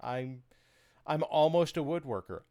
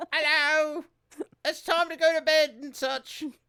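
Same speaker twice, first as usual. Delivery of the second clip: very high, loud, put-on British voice; 12 semitones higher, 5 dB louder than usual. Saying goodnight to everybody, asked for an actual British voice, in a British accent. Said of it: "British voice".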